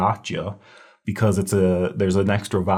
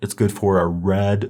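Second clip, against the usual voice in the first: ordinary delivery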